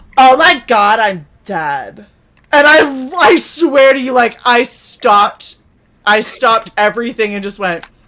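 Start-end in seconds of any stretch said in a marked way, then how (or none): 0.0-2.1 put-on very slow, gasping teenage girl voice. Retelling what a girl said about a hoodie: imitating a gasping teen girl.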